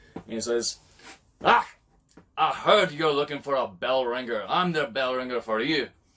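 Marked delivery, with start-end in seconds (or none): 1.5-5.9 put-on loud, burly, booming Scottish accent. Telling a joke, voicing a big burly Scotsman applying as bell ringer: big burly Scotsman voice. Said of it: "big, burly Scotsman who".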